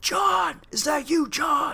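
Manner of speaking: very high, stretched-out, drawn-out yell. Recounting a man with his hand on his gun calling out, retelling a yell. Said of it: "I hear him yell".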